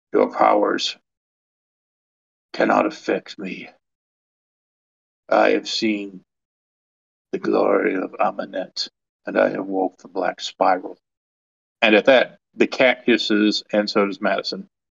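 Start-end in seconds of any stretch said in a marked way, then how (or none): 0.1-10.9 low, rough, guttural growling voice from the throat. A narrator voices the caretaker, just turned from a wolf, speaking, low guttural growl. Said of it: "growls in a low guttural voice and says".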